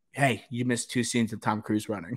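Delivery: acted whispering. Retelling what dad said during the movie trailers: imitating a whisper. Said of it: "whispers in your ear".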